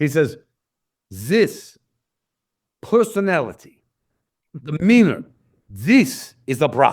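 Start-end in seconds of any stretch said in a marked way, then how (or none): 1.1-6.9 put-on German accent, very slow and drawn out. Retelling a man praising a dog's personality, put-on German accent. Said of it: "I'm doing a German accent because I can't do Italian".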